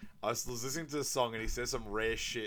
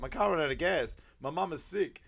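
high, loud, groveling, over-the-top pleading; 6 semitones higher, 5 dB louder than usual. Retelling a late man begging his date: imitating over-the-top begging apology. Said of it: "over-apologizing, just going over the top".

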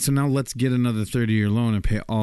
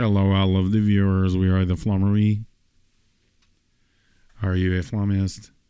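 monotone, machine-like robotic computer voice. Greeting all of the viewers, robotic computer voice. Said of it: "you're doing your computer voice?".

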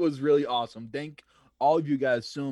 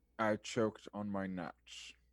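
low, deep, slow, deliberate voice; 5 semitones lower, 11 dB quieter than usual. Saying a parting line before signing off, in an Alan Rickman voice. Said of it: "Alan Rickman".

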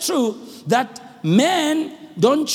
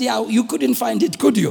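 put-on teasing tone. Recounting teasing a woman who couldn't find it, re-enacting the teasing. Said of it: "Then I teased her and I said".

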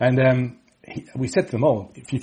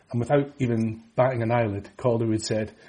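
ordinary talk

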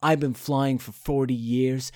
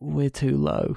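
very quiet, softly spoken. Retelling a film scene where a woman speaks just before a crash, very quiet. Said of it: "the woman just very quietly goes".

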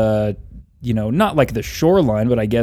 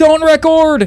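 put-on shout, higher and louder; 8 dB louder than usual. Retelling how everyone on the shore shouted at the boat: imitating people shouting. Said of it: "they started shouting".

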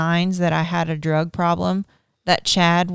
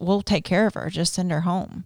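put-on shaky, trembling voice, quieter; 4 dB quieter than usual. Retelling the speaker's dad's words about her, imitating dad's shaky voice. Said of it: "It was really shaky".

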